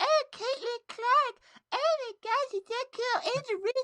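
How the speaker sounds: put-on squeaky, very high-pitched voice. Mocking casual fans watching the tournaments, like Cartman doing a voice. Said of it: "sound like Cartman doing a voice".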